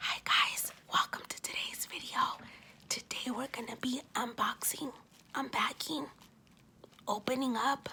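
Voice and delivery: soft, hushed, breathy whisper. A host opening today's unboxing video, whispering. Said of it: "I'm whispering".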